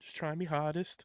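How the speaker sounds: put-on Liverpool accent. Quoting the son in an iconic Augusta video, in a pseudo Liverpool accent. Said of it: "when he does his like pseudo Liverpool accent".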